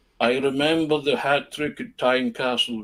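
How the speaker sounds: put-on villainous voice with Swedish accent. Retelling what a man said while handing back signed pages, in a Bond villain Swedish voice. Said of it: "that kind of Bond villain Swedish".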